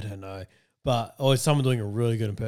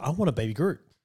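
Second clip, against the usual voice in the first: normal talking voice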